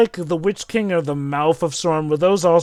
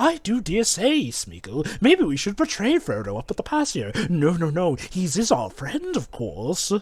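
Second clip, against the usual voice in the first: psychotic butler voice, quieter; 5 dB quieter than usual. Imagining the character speaking this way in the Jackson movies: psychotic butler voice. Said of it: "imagine if he spoke like this".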